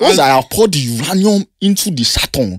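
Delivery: fake film-style Nigerian accent. Friends mocking a portrayal of Nigerians in Lagos: fake movie Nigerian accent. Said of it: "That's literally not the Nigerian accent".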